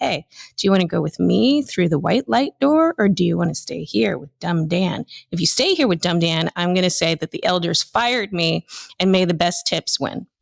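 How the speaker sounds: mock-flirty voice. Mocking a man sliding into her DMs, imitating his flirty come-on.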